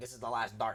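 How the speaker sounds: Texas twang breaking through. A speaker quotes his favorite line from a game: Texas twang. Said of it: "his Texas twang came out".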